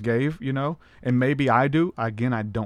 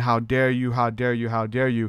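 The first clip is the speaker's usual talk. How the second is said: mock-tearful voice, acting out crying. Retelling what she said while calling them out, imitating someone in tears. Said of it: "she's like in tears saying".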